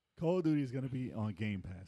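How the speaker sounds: ordinary talk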